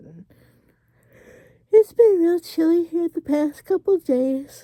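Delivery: speaking through a yawn, very high-pitched and loud. Tucked in bed under a cozy blanket, chatting to viewers, yawning while talking. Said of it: "Excuse me for yawning".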